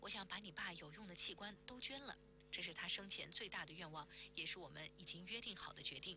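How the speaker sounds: plain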